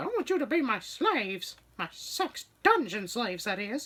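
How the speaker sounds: squeaky voice, pitch swooping up and down. Speaker retells a line he read aloud, doing it in Mickey Mouse voice. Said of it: "as I was reading it with Mickey Mouse's voice".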